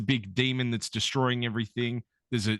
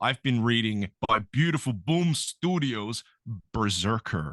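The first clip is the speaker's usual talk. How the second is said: put-on American accent. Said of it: "say the name of this book in an American accent".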